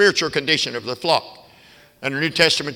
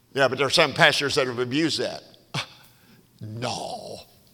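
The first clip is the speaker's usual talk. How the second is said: snide, sarcastic, put-on tone; 3 semitones lower, 6 dB quieter than usual. Talking to listeners, the speaker voices an imagined objection: sarcastic mock objection. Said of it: "Sorry for the sarcasm there".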